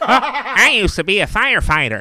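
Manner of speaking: very high and loud, pushed out. Doing a quick impression for the others: Steve Buscemi impression. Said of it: "that's my Steve Buscemi".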